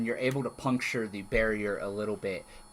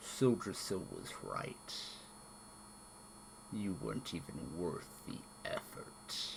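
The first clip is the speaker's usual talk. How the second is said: echoing dragon voice, much lower and quieter; 5 semitones lower, 12 dB quieter than usual. Game master voicing a dragon addressing the party, echoing dragon voice. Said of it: "and you hear echoing out over the battlefield its voice".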